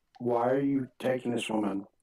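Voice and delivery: hushed whispering. In a tabletop game, Darius asks a man why he is taking the woman: whispering. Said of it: "whisper again".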